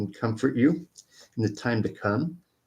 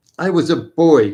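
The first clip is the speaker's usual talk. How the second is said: very loud, exasperated, impatient outburst; 4 semitones higher, 10 dB louder than usual. Reading a story aloud, a man answering his former love: impatient. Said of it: "he said impatiently".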